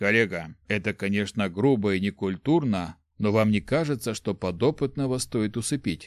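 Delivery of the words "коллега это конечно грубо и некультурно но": plain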